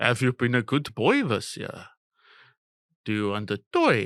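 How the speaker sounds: put-on Afrikaans-accented speech. Recalling what a childhood Father Christmas asked the kids, in an Afrikaans accent. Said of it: "He's Afrikaans".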